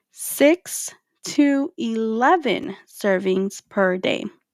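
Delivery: slow, deliberate, emphatic delivery. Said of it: "I'm gonna let you guys hear that again".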